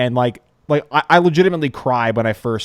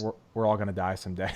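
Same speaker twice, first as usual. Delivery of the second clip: fake deadpan tone, quieter; 3 semitones lower, 11 dB quieter than usual. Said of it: "saying really depressing things in such a deadpan manner".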